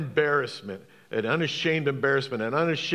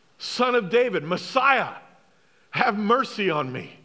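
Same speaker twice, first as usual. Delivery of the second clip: play-acted high, screaming cry; 7 semitones higher, 4 dB louder than usual. Retelling how the blind beggar cried to Jesus: imitating Bartimaeus screaming. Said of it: "He was screaming".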